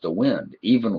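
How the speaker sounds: ordinary delivery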